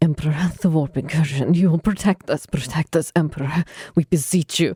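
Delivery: hushed murmur under the breath. A character prays to the emperor as a demon appears, whispered prayer. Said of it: "whispering prayer to the Emperor under her breath".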